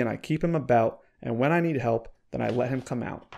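ordinary delivery, nothing marked

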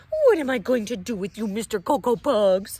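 very loud, scolding telling-off tone. Narrator reads Mama Junebug Jones speaking to Skippyjon, scolding. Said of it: "She scolded".

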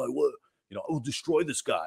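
put-on high-pitched, menacing tough guy voice. Describing the voice the speaker uses for people with that attitude, tough-guy voice. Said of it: "tough guy".

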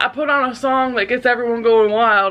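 usual speaking voice

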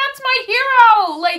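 upset, hurt protesting tone. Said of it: "gets so upset 'cause he's like".

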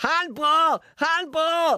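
very high-pitched, loud shouting. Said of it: "He kept shouting".

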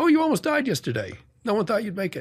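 put-on pretty strong Boston accent, very high and swooping. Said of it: "pretty strong Boston accent going on".

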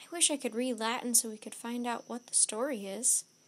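ordinary delivery, nothing marked

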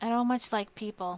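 plain

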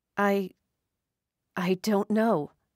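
stammered delivery. A woman answers the doctor's question about her age, stammering. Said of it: "she stammered".

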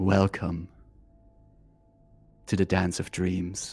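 deep, echoey voice sounding from everywhere. Narrating a voice all the players hear in the session, echoey voice. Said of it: "you hear an echoey voice saying".

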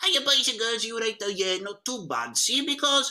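really squeaky, high put-on character voice. Demonstrating the character voice once used in Post Call, squeaky character voice. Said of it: "I used to be really squeaky".

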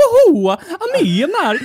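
very high, squeaky, swooping, slow goofy voice. Retelling the French dub of a film: imitating the French dub of Mario. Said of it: "some guy being like".

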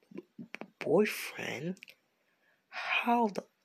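shocked stutter, dragged out very slowly. Acting out a made-up story where a teacher hears "boyfriend": shocked. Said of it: "she's shocked".

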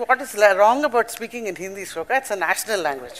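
ordinary delivery

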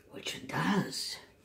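whispered aside.

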